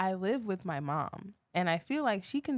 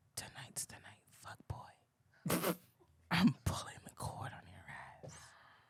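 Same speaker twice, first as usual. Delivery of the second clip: very hushed, very quiet, breathy whisper under the breath; 11 semitones lower, 9 dB quieter than usual. Recalling the baby mama slipping into the room during a coma, retelling a whisper. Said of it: "slipping into my room and whispering".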